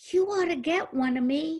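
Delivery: put-on high little child voice. Retelling what Joshua said while leaving with his mom: little child voice. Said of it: "said in his little child voice".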